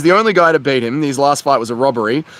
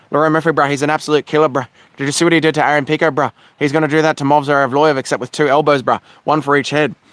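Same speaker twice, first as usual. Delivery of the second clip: ordinary talk, nothing marked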